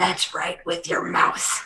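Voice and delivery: terrifying, menacing, mocking, taunting whisper. Taunting another character while sneaking past: terrifying taunting voice. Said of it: "the terrifying voice that warned you of the hole is now taunting you".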